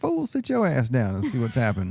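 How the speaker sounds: normal talking voice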